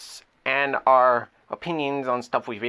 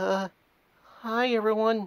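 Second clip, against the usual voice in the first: nervous, much higher-pitched character voice; 7 semitones higher, 5 dB quieter than usual. Little brother greeting everyone, appearing on camera for the first time: nervous Sprinkles voice. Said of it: "Why are you so nervous?".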